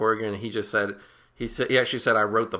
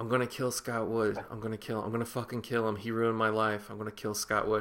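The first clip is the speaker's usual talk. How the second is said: imitated muttering, much quieter; 7 dB quieter than usual. Speaker retelling a character's phone-booth scene, Billy muttering to himself. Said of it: "and then muttering to himself".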